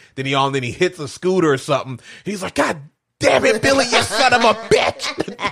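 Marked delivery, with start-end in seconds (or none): 2.6-5.5 put-on very high, sudden, drawn-out outburst, losing control. Retelling a scene where a dad hits a scooter: imitating someone losing his temper. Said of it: "he loses his shit".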